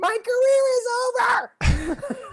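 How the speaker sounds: mock very high, very slow, drawn-out despairing scream. Muted during a Zoom show, retelling screaming into the screen. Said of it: "I'm screaming into the screen".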